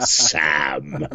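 word spat out with pure hatred. Recalling saying a man's name, 'Sam' spat with acted hatred. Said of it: "I was able to say it with all the hatred that I could possibly put into three letter word".

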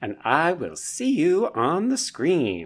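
drawn-out, showy, high, swooping sing-song. Signing off the episode, impersonating the other speaker. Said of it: "That was my impersonation of you".

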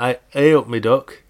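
loud, bad, mock Derby accent.

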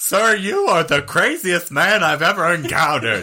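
loud, high-pitched nerdy voice. Acting out the UFO guy reacting to a strange letter: imitating the UFO guy's voice. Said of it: "That's how his voice sounds to me".

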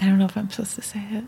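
quiet whispering. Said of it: "you're whispering".

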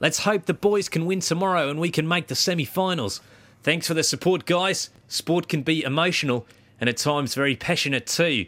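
put-on Australian accent. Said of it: "if I'm gonna do an Australian accent".

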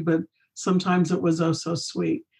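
ordinary talk, nothing marked

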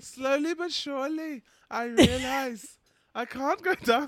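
loud, very high put-on Indian accent. Quoting a woman from a clip, in an Indian accent impression. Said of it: "Why are you Indian?".

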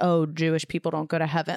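ordinary talk, nothing marked

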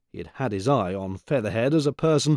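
ordinary delivery

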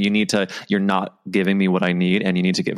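ordinary delivery

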